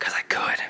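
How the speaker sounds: soft, breathless whisper. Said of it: "Why are you whispering to me".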